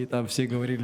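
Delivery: normal talking voice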